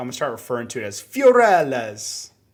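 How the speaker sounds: bad put-on Italian accent, loud and swooping. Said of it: "your accent isn't that terrible".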